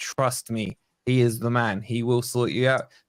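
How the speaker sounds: ordinary talk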